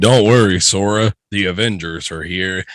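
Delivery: put-on manly, masculine voice. Pitching a game scene where a shield hits the monster, in a manly voice. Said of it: "you hear a manly voice".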